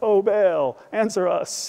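play-acted, dopey, slow, foolish-sounding, nimrod-style. Imitating how the line sounds on an audio bible: foolish-sounding plea. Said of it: "Kind of makes them sound like a, like a bunch of Nimrods".

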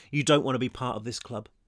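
plain reading voice

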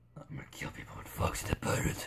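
hushed, breathy, whispered evil villain voice. Playing a game, switching into an evil voice. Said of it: "That's my evil voice".

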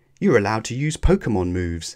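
ordinary delivery

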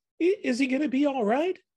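very high, trembling, quivering on every word. Theo speaks up after Donnie failed to change back at dawn; trembling voice. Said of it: "his voice trembling with every word".

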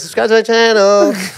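put-on American accent, high pitch. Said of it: "In the American accents as well".

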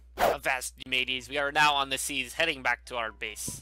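swashbuckling pirate voice. Heading back to base by sea, talking like a pirate. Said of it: "I am going to stop talking like a pirate".

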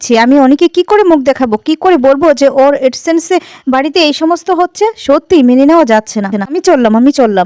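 ordinary delivery, nothing marked

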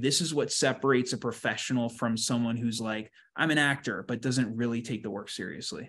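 plain

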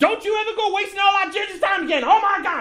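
put-on very high, screeching, scolding tone. Describing an imagined court scene, imitate a woman screaming at someone leaving court. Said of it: "and her constantly screaming".

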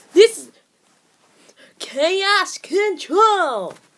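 put-on high cartoon hero voice, slow. Trying out character voices, doing a voice like Sonic. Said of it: "when you are just doing a voice like Sonic".

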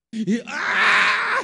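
pained cry, as if stung.

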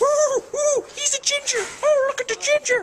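put-on cartoon mouse voice. Offering the group a Mickey Mouse impression about gingers: Mickey Mouse impression. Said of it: "You guys want to hear a Mickey Mouse impression?".

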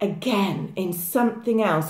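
ordinary talk

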